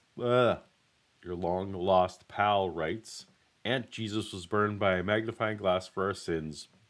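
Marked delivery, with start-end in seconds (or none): none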